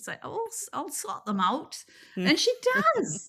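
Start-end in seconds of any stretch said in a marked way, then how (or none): 0.2-1.8 put-on little Scottish lady voice. Retelling what the knitting government representative said, imitating a little Scottish lady. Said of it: "this little Scottish lady with no education".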